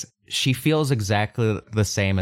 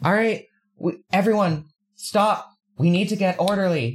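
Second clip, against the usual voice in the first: very high, shaky voice, determined but unsteady; 11 semitones higher than usual. Voicing a character addressing everyone, commanding but shaky. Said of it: "a voice that is commanding in a way that's still shaky".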